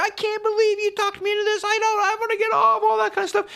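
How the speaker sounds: very high, screamed voice. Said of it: "just screaming in my ear".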